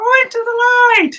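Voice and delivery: put-on very high old-lady voice. Speaker recalls someone's impression when their mom was missing, Poltergeist old-lady impression. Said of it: "the old lady in Poltergeist".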